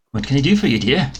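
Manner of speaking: put-on high, elderly dwarf woman voice. Playing a shopkeeper greeting a customer, in an old woman dwarf voice. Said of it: "I don't know how to make an old woman dwarf voice".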